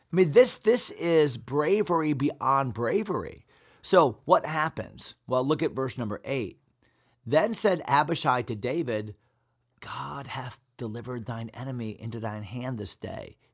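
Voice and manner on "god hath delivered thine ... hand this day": very quiet, secretive, barely audible half-whisper. Reading a Bible verse, voicing Abishai speaking to David: half-whispering as Abishai. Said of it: "the reason I'm whispering".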